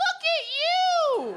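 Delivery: put-on very high, slow, cooing baby talk.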